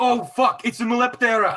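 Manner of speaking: very high-pitched, shrill, loud character shout. Playing a character as she steps out: shouting in character. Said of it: "I'm going to shout".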